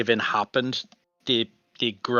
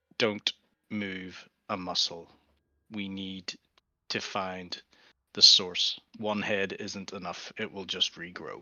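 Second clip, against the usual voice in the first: utterly composed, steady, very calm, hushed delivery; 4 semitones lower, 9 dB quieter than usual. A game master voices a character answering an ally's panicked message, very calm. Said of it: "very calmly like says".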